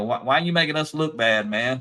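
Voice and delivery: put-on sarcastic voice. Retelling how the day shift worker walked up: imitating a sarcastic coworker. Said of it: "he walked up kinda sarcastic".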